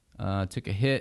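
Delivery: ordinary talk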